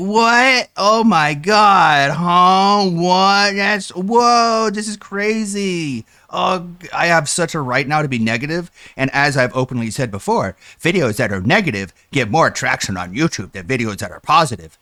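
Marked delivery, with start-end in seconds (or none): 0.0-6.7 very slow, high fake shock, huh stretched out. Mocking another speaker who pretends to be shocked by an order: imitating someone faking surprise. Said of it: "I'm gonna pretend like I ordered".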